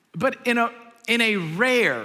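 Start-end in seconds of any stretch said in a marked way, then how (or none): 1.3-2.0 heavy stress on rare. A parent recounting a bedtime moment with a child: stress on 'rare'. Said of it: "emphasis on the word rare".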